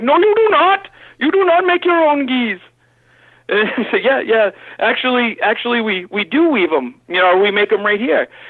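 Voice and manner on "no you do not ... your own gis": put-on Pakistani accent, very high-pitched. Retelling a sales call from Pakistan, the speaker voices the caller: imitating a Pakistani caller. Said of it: "me doing an imitation of a phone call of Pakistan calling".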